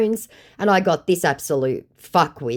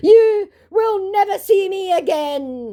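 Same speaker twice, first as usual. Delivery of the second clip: much higher, slow mock menacing tone. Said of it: "he threatens".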